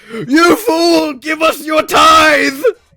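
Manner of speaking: loud shouting soldier voice. Voicing a soldier who runs up demanding payment: soldier shouting. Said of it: "runs up and shouts".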